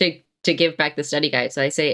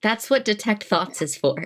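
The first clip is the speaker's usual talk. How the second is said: mock stage whisper, higher pitch; 4 semitones higher than usual. A player's character leans in toward another character, speaking in a mock whisper. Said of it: "lean in and like in a mock whisper".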